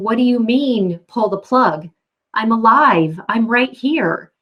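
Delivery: desperate scream, pushed out but held in. Retelling how a woman in intensive care screamed in her mind: retelling a scream. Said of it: "and she's screaming".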